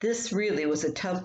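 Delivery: ordinary delivery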